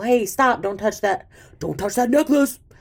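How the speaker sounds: put-on yelling. Retelling a book scene where Kel yells at people: retelling a character's yell. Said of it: "before Kel could yell at the people".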